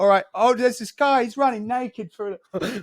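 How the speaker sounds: put-on very high, loud British woman's accent. Retelling a woman on her phone as he ran past, imitating a British accent. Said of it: "I just remember her talking in a British accent".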